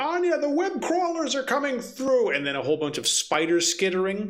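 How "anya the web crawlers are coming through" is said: put-on very high, urgent shout from the background. Voicing a background caller during a call: background character yelling. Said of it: "someone yelling, like".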